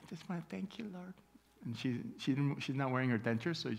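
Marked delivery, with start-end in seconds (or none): 0.1-1.1 put-on little lisp, higher and quieter. Imitating her praying without her dentures: imitating a little lisp. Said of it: "has a little lisp".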